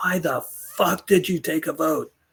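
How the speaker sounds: light, mild, high-pitched screamed outburst. Recalling a meeting in his office after a vote, retelling a scream. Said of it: "and I just screamed".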